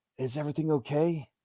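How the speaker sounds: high stage whisper. Voicing a character who calls out without waking a sleeper: stage whisper. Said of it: "calls out to you in a stage whisper".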